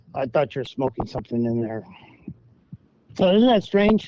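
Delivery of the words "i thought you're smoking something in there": ordinary talk, nothing marked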